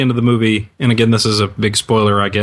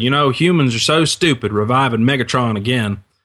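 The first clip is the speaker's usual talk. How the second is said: put-on deep Southern accent, slower; 2 semitones higher than usual. Recalling a moviegoer speaking to his companion after a film, deep Southern accent. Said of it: "a guy with this very deep Southern accent".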